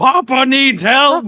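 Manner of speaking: shrill, booming, very high, loud dragon bellow. A player describes their dragon calling out for help, in the loudest roaring dragon voice. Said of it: "he just roars with the loudest dragon voice he can get".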